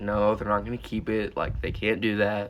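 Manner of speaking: usual speaking voice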